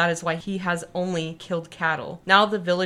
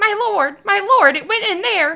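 shrill, loud, high squeaking voice; 9 dB louder than usual. Reading the story aloud, the hyena calls from behind his lord at the cave: squeaky Tabaki voice. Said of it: "behind him was squeaking".

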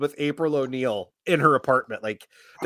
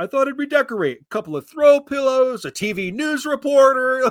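dry sarcasm, very high-pitched voice; 9 semitones higher than usual. Quoting a funny line of Raphael's from the movie: sarcastic Raphael line. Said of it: "sarcastic way of".

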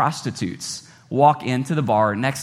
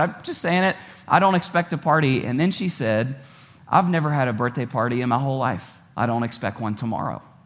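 ordinary talk, nothing marked

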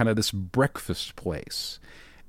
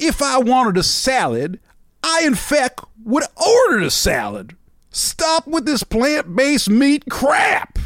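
very high, loud, swooping put-on old Southern man accent; 13 semitones higher, 5 dB louder than usual. Speaker performs a bit as an older Southern man: older Southern man accent. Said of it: "You like that accent?".

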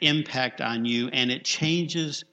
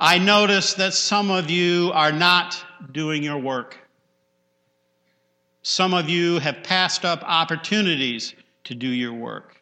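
put-on loud, booming, proclaiming voice; 4 semitones higher, 5 dB louder than usual. Retelling a minister addressing the group from a podium, in a booming voice. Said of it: "he said in a booming voice".

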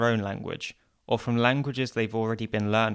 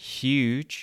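huge, very slow, each sound overdone; 2 semitones higher than usual. Teaching english pronunciation, with huge said very slowly. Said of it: "If you pronounce it very slowly and exaggerate the sounds".

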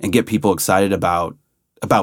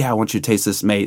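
put-on broad Australian accent, laid on. Retelling a visitor asking the speaker to taste something, thick aussie accent. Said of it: "like really thick Aussie accent".

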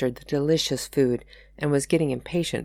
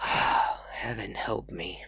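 soft, fed-up, exasperated words on a sigh; 6 semitones lower, 6 dB quieter than usual. Having cut his hand, [name] looks up and speaks with an exasperated sigh. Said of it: "He let out an exasperated sigh as he looked up and added".

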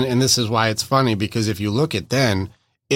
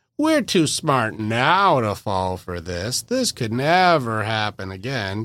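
slow, swooping, heavily sarcastic tone. Retelling an old video's line, imitating own sarcastic tone. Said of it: "me being highly sarcastic".

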